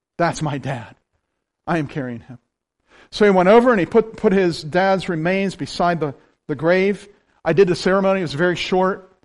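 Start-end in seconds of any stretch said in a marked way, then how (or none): 0.2-2.4 emotional voice, lower and quieter. Retelling the son's words at the grave site: imitating the son's emotional voice. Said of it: "That emotion was in his voice".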